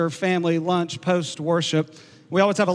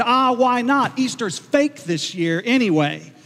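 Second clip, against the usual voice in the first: put-on playful, jokey, pitched-up, drawn-out tone; 5 semitones higher than usual. Speaker retells his youngest son's reply after being told no, retelling a joking remark. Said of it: "he jokingly said".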